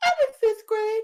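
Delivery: put-on very high, loud little child voice. Asked by another speaker to do the kid voice, doing a small kid voice. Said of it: "the kid voice you did the other day".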